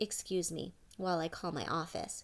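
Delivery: ordinary delivery, nothing marked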